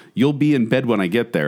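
ordinary delivery

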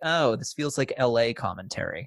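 normal talking voice

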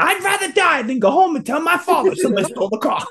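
high, fast, laughing, mock-desperate. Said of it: "He goes".

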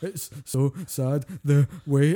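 very slow, drawn-out, tearful, sobbing blubbering. Retelling how a friend sobbed at a movie: imitating someone crying. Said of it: "He's crying like a fucking prom queen".

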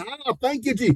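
high, happy, joyful voice. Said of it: "He got happy driving".

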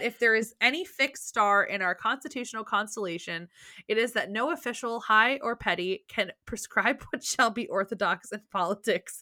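giggly speech broken up by laughter. Reading a quote aloud from notes, laughing while reading aloud. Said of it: "I don't know why I'm laughing".

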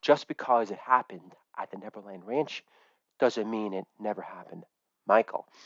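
very soft, hushed therapist voice, almost under breath. Doing an impression of Marlon Brando as a therapist: Marlon Brando impression. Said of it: "an impression of Marlon Brando in character as a therapist".

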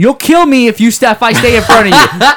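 put-on loud yell. Retelling a roadside encounter with a driver: imitating his own yell. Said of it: "I just yell as loud as I can".

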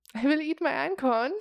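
put-on voice of a very old man. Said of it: "Utsi was like".

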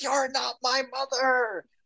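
acted-out shrill, furious yell, pitched very high. Speaker recounts a scene where he shouts at a woman playing his mother: retelling a shout. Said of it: "just shouts at her like".

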